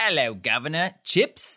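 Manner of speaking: clumsy, really bad, fake British accent. Retelling how she answered the door in a really bad British accent. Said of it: "in a really bad British accent".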